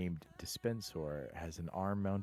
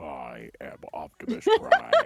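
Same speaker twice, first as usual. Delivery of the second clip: very loud, slow, swooping booming voice; 3 semitones lower, 13 dB louder than usual. Doing an impression the other speaker expected: Optimus Prime voice. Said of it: "How did I know you were gonna go for that?".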